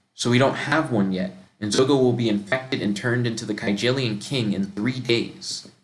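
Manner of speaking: ordinary talk, nothing marked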